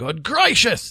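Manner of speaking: sudden exclaimed outburst. A man sees two entwined figures strolling along the cliff road: exclaiming. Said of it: "Exclaimed Sir Grimoire".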